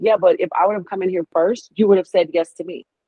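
ordinary talk

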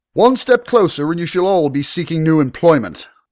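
very high, shrill, ringing shout. The young lord, dagger at the tavern owner's throat, warns the approaching bruisers: shouted. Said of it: "The young lord shouted".

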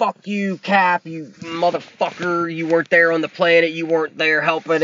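acted, pissed-off, angry outburst rant. Retelling a movie scene, imitating an angry Tony Stark. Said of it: "Tony's kinda pissed".

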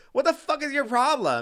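put-on acted-out shrill, high drunken yelling. Speaker retells yelling at a guy after pushing him into a wall, retelling a drunk yell. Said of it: "I'm like yelling at him because I'm drunk".

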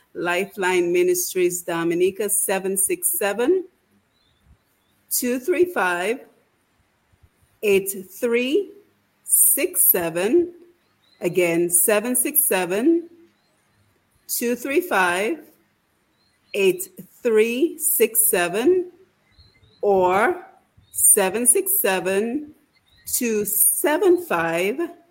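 very slow, careful reading. Radio host reads phone numbers so listeners can write them down, very slowly. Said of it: "I'm going to read it very slowly".

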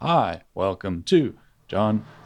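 synthesized robotic voice doing sports game commentary. Imitating early game commentary: Stephen Hawking meets John Madden voice. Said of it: "a sort of Stephen Hawking meets, uh, John Madden voice".

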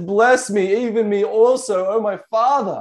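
acted-out anguish, slow, pained, full of desperation. Telling how a son repents too late of selling his birthright, imitating Esau's pain and desperation. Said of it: "You can hear the pain and desperation in his voice".

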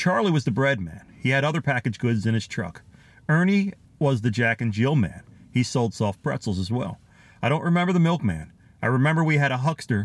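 ordinary talk

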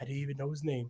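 all quiet, very soft promo voice. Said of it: "when he gets all quiet".

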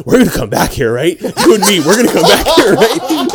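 high, mock blackout-drunk voice, insistent. Retelling how Andrew kept leaning over to Dalton: imitating drunk Andrew. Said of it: "He was blacked at that point".

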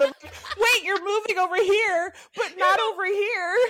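mock shrill panicked yelling, very high-pitched. Retelling a moment when the phone kept recording, reenacting yelling at the phone. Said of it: "I'm like yelling at the phone".

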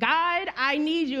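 play-acted, desperate crying out at full scream. Speaker retelling crying out to god in an apartment at night, re-enacting a scream. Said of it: "so I'm like screaming".

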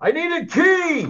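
very high, drawn-out yelling. Playing a character stuck at a locked door: yelling down a hallway. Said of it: "kinda yell down the hallway".

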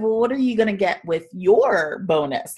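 playful, joking tone. Retelling how he asked the same question back to him, jokingly. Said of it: "kind of jokingly saying it back to him".

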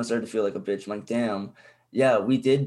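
ordinary talk, nothing marked

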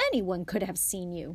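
usual speaking voice

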